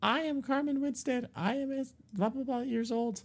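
put-on ugly, very high, synthetic robotic girl voice. Quoting an online voice recording: imitating ugly robotic girl voice. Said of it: "this really ugly robotic girl voice".

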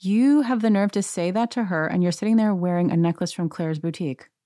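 ordinary delivery

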